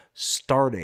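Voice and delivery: emphasis on 'starting'. Host reading out a machine's specs, stress on 'starting'. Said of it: "emphasis on starting".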